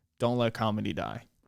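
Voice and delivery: ordinary talk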